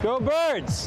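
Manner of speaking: very high-pitched cheering shout. Playing a new sound drop for chat: yelling. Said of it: "it's actually my voice yelling".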